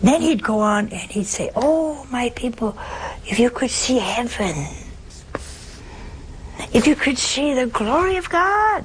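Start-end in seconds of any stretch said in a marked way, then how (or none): 1.5-8.9 put-on high-pitched preacher voice. A speaker acts out a priest preaching to his people, in a high-pitched voice. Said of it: "in his high-pitched voice".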